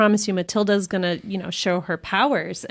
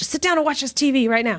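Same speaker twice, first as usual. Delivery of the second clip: high, pitched-up, demanding voice; 6 semitones higher than usual. Imitating a parent ordering kids to watch TV: Danny DeVito voice. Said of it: "You were totally Danny DeVito".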